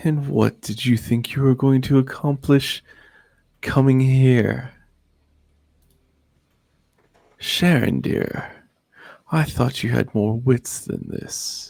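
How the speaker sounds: woman's voice laughing mockingly. Voicing a woman who laughs at the players: woman's voice laughing at you. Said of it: "a woman's voice laughing at you".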